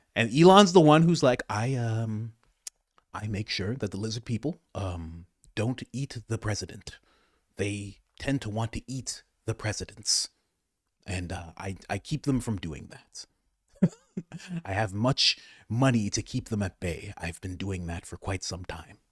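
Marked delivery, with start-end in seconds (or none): 1.5-18.9 stumbling through words with pauses. Acting out a line about lizard people: Elon Musk impression. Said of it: "That's my Elon impression".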